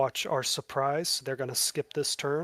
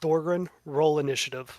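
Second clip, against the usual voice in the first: usual speaking voice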